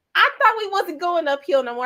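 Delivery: high, mock outraged whine.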